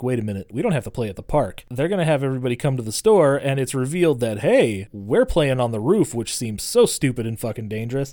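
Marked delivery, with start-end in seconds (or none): none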